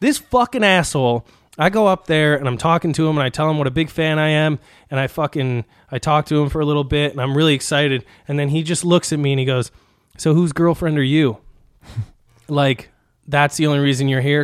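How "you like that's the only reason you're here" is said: ordinary talk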